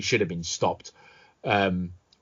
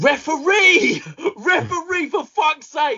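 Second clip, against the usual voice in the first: very high, stretched-out, drawn-out shriek; 7 dB louder than usual. Reenacting screaming at the referee to stop a boxing fight: screaming. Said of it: "That was me on Saturday night screaming".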